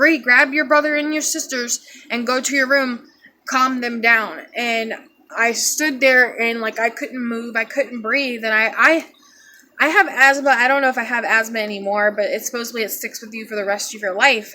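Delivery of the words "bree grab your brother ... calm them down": ordinary talk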